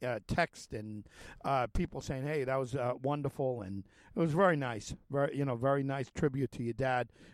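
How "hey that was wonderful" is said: usual speaking voice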